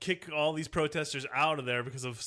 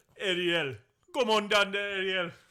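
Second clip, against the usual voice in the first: bad, put-on Jamaican accent, pitched up high; 6 semitones higher, 4 dB louder than usual. Speaker tries a Jamaican accent, playing Sebastian: Sebastian Jamaican accent. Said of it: "I'll do a Jamaican accent right now".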